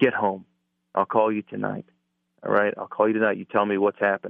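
normal talking voice

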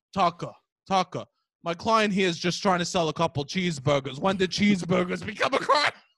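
put-on familiar, old-pal tone with Staten Island accent. Retelling a lawyer talking to a TV host, imitating a Staten Island lawyer. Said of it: "what I would be if I was a Staten Island lawyer".

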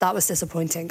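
ordinary delivery

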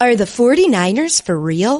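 TV sportscaster, sports anchor style delivery. Talking with others about the undefeated 49ers, putting on an ESPN voice. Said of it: "Let me put on my ESPN voice".

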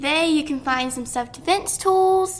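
put-on British accent. Asked what you can find at Atomic Bear, answering in a put-on British accent. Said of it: "British [name]?".

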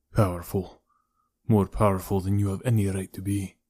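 ordinary delivery

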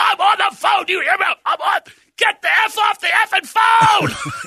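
shrill, very high screaming. Retelling being heckled on the phone, the speaker is imitating a man screaming. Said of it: "He screams".

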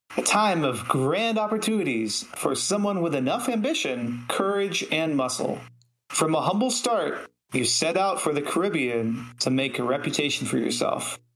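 ordinary talk, nothing marked

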